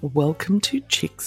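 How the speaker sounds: really deep put-on voice. Asked by a co-host to redo the podcast intro with feeling, really deep voice. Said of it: "that's just with a really deep voice".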